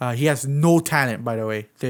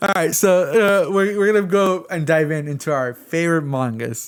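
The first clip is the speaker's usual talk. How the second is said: words broken by laughter and giggles; 3 semitones higher than usual. Starting a favorite manga list after a teasing remark, laughing while talking. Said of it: "I'm sorry, I'm so laughing".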